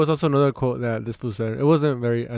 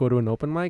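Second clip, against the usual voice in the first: normal talking voice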